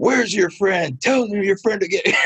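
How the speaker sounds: put-on heated, defensive tone. Retelling confronting a woman about their painted wall, acting out getting defensive. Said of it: "I was like all defensive".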